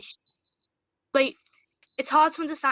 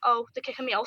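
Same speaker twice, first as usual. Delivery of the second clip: usual speaking voice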